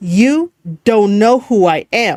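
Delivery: choppy, pause-filled wrestling promo cadence. Explaining speech patterns to avoid, the speaker demos a broken-up wrestling promo cadence. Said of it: "Like that kind of cadence where it breaks up".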